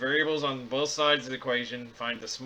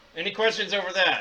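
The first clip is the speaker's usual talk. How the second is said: loud, pitched-up, half-yelled delivery; 6 semitones higher, 5 dB louder than usual. Asking the audience for questions after solving an equation: talking loudly. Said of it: "Why are you yelling at me?".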